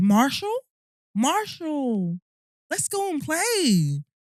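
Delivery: put-on high, sing-song, child's American accent. Retelling how a friend's son talked after watching Paw Patrol: imitating Jason's American accent. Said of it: "He had an American accent".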